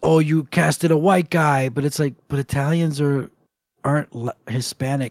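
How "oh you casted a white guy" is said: put-on upset, complaining voice. Retelling an actor's complaint about the casting: John Leguizamo upset.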